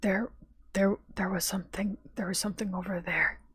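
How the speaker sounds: hushed whisper. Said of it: "in a more whispered tone".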